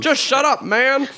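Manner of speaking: put-on old man drawl. Comparing how two figures talk, imitating Joe Biden. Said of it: "Joe Biden talks like Bones. He's like".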